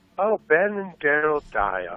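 condescending, patronizing tone. Repeating the names of two people just announced as present, condescending. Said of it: "Sounded very condescending".

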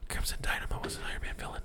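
quick whispered voice. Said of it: "I'm just like".

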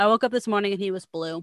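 ordinary delivery

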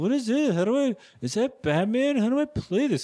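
put-on drunken voice. Teasing the other speaker about coming home while they play games, imitating someone drunk.

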